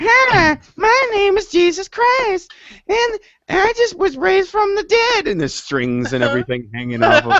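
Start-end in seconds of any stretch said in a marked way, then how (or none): 0.0-5.3 very high, slow, drawn-out cartoon character voice. Playing Jesus in a bit, unable to avoid it: Mr. Hankey-like voice. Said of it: "I can't do it without sounding like Hanky".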